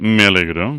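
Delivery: dropped, calmer voice.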